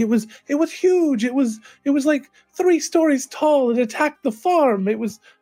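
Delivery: a little hysterical, excited. A woman talking with the bartender, slightly hysterical. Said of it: "sort of a little bit hysterical".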